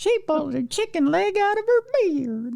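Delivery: put-on very high little kid voice. Imagining little kids reacting at a circus, imitating little kids talking. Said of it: "I don't know why they speak like that".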